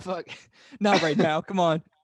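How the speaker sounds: loud, high laughing through the words. Fighting off a fit of giggles while another speaker explains: laughing while talking. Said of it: "I got the giggles".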